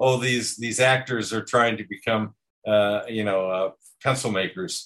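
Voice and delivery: ordinary delivery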